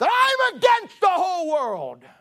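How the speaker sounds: acted-out snarl, very high and very loud. Retelling a man's reply to his friend's warning, retelling a snarl. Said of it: "He looked back and snarled".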